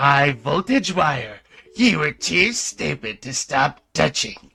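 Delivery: put-on crazy creature voice. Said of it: "some kind of crazy monster voice".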